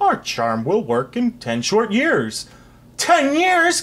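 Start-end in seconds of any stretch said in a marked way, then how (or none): 3.0-3.8 shrill, high, loud gasped outcry. A king told the charm will take ten years, gasping. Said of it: "gasped the king".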